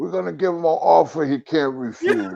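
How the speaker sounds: soft, hushed movie-star voice. Showing off your own impression after recalling Harlem Nights, in a Marlon Brando voice. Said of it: "my Marlon Brando voice".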